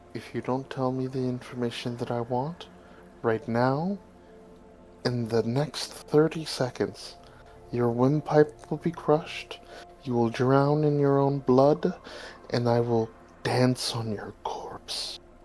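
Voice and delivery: very quiet, hushed, menacing, threatening whisper. Roleplaying, the player grabs a man by the throat for answers; whisper in his ear. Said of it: "I'll kind of like whisper in his ear".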